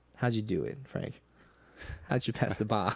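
put-on repeated, pestering, nagging tone in a Boston accent. Sharing your favorite Catch Me If You Can scene, you do Tom Hanks nagging in a Boston accent. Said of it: "Is that your Boston accent?".

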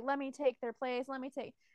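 mock, put-on begging and pleading voice. Retelling a character begging the queen: imitating a begging plea. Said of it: "begging the".

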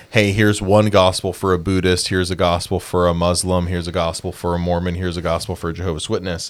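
plain

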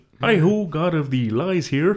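high, goofy, froggy puppet voice. Showing a co-player the voice you just found you could do, a Kermit impression.

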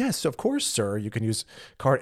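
polite, friendly, helpful tone with swooping pitch. Showing how the cashier could have answered more nicely: imitating a nice polite reply. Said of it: "you could say it nicer way".

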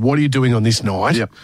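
ordinary talk, nothing marked

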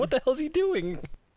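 high, panicked mock screaming. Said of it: "everybody's screaming, like".

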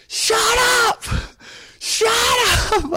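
put-on very high, very slow, drawn-out furious cry. Retelling losing temper at a heckler: imitating own furious yelling. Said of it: "I lost it".

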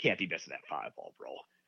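sneering voice dripping with contempt and disdain. Repeating what a man said to his partner, with mock contempt. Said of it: "so much disdain in his voice".

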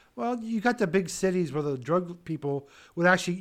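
ordinary delivery

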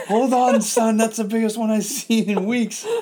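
high, loud, excited, laughing shout.

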